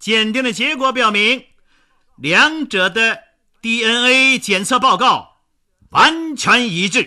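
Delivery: very high, very loud, booming, bell-like proclamation. Narrator reads the prosecutor's line after a pause for suspense, booming voice. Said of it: "声如洪钟".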